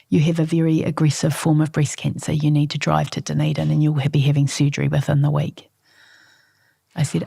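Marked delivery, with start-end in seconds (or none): none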